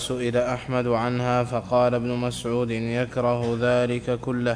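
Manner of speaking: normal talking voice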